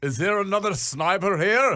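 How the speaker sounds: put-on heavy Finnish accent. Retelling what someone said near a podcast listener in Helsinki, in a thick Finnish accent. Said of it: "in a thick Finnish accent".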